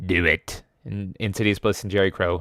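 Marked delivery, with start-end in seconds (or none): 0.0-0.6 put-on sinister emperor voice, lower. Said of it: "everyone did their Palpatine voice".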